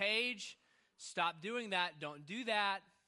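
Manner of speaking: loud, firm, stern put-on dad voice hollering. A father recalls yelling upstairs to his three-year-old daughter, retelling a holler in dad voice. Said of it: "I hollered with my dad voice".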